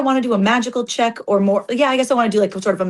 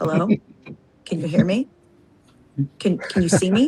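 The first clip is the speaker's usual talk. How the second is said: hushed, quick speech, lower in pitch; 4 semitones lower than usual. Voicing a character who quietly tries to talk to a magical butterfly: quietly talking to it fast. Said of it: "Eleanor does quietly try to talk to it".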